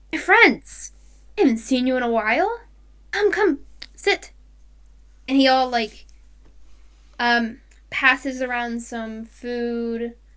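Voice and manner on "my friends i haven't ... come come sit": quick, welcoming psychic voice. The storyteller voices the psychic coming over to greet the group: Ue the psychic's voice. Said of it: "and he stops for a moment and smiles and comes over to all of you. My friends, / and he stops for a moment and smiles and comes over to all of you. / Let's go see the psychic".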